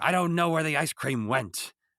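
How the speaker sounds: loud, high, mad, fuming outburst. Retelling a scene where Doc is mad: imitating Doc's mad delivery. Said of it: "whereas he's mad".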